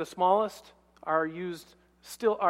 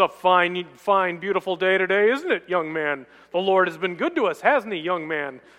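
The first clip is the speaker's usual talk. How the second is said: put-on rich male voice; 6 dB louder than usual. Speaker quotes a man who always encouraged them, imitating a rich voice. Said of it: "He had a rich voice".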